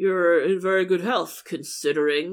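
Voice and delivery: acted-out dark, sinister, ominous delivery. Retelling a man's remark to a pregnant woman at a checkup, imitating speaking darkly. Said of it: "he said darkly".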